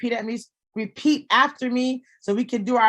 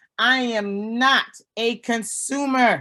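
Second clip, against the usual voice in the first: slow, drawn-out, deliberate, with conviction. Leading a group affirmation, saying it like you mean it. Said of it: "say this like you mean it".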